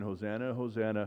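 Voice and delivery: ordinary delivery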